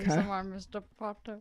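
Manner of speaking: put-on milky, drawling impression voice. Trying the milky-mouth trick for Alan Rickman: Alan Rickman as Snape voice. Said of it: "Already there's this better".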